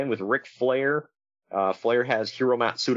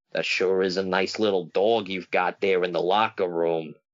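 put-on creepy voice, lower pitch; 6 semitones lower than usual. Retelling what Kevin Sullivan randomly said on the mic: creepy Kevin Sullivan impression. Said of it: "That sounded so creepy".

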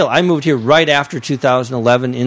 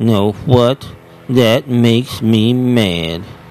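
sad, droopy cartoon hound voice; 3 semitones lower than usual. Explaining the cartoon dog Droopy to friends who don't know him, Droopy voice. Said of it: "He's like".

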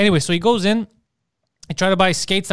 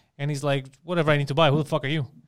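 ordinary talk

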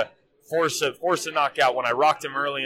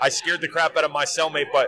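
normal talking voice

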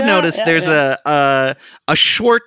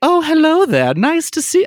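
put-on Southern accent, pitched way up; 12 semitones higher than usual. Voicing the mayor of Imperia as she greets someone, Laura Louver Cooper's southern accent. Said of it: "That's her public voice".

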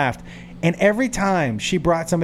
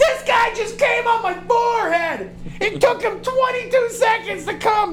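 very high, screeching, screamed outburst. Acting out a woman screaming on her way up the stairs, retelling a scream. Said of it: "She's screaming".

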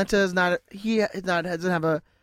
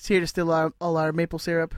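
plain

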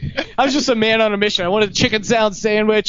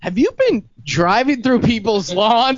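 mock bewildered, puzzled, confused mom voice. Recalling his mother questioning him after his plate was written down, imitating mom's confused voice. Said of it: "my mom had to talk to me in this confused voice".

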